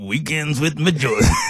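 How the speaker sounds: on-air announcer delivery. Speaker tries to mimic a radio show promo, then gives up: KFM 94.5 radio voice. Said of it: "Let me try and do that voice".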